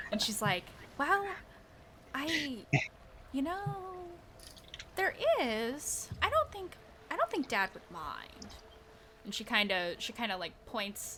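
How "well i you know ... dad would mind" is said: secretive, conspiratorial tone, higher and quieter. Voicing a barkeep's daughter, Sarah, answering about a back entry: conspiratorial tone. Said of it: "she kinda leans in conspiratorially".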